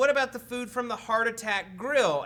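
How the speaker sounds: ordinary delivery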